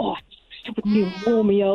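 irritated, annoyed, jealous grumbling. Retelling how a jealous boyfriend complains about a barista's name: imitating an annoyed boyfriend. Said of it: "my boyfriend's always like".

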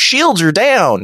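put-on Southern accent, pitched high. Imitating a Klingon helms officer who speaks with a Southern accent. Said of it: "sounds like the only Southern voiced Klingon guy".

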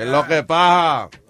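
put-on Puerto Rican accent. Showing the accent you use to call a show, in a put-on Puerto Rican accent. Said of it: "I had to do the Puerto Rican accent there".

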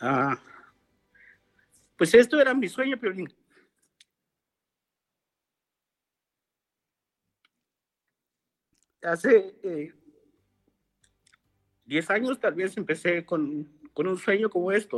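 tearful, crying while talking. Answering why he cries, telling of a long-held dream: crying while talking. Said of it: "¿Por qué lloras, campeón?".

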